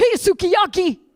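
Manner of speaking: put-on, very high-pitched shouted call. Retelling a passerby calling out while riding a bicycle: imitating a man yelling. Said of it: "this guy just yelled out".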